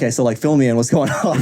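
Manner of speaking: ordinary talk, nothing marked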